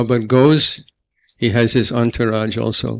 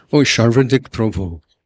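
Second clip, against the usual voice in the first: put-on Bengali accent. Retelling how a revered teacher greeted him by name: imitating a bengali accent. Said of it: "with his cute Bengali accent".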